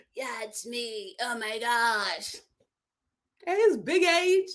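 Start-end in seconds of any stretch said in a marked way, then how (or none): 0.1-2.3 lazy, slow, would-be sultry lady-killer drawl. Mocking a contestant's voice that the women find attractive: imitating Shane's voice. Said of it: "that voice couldn't get no woman".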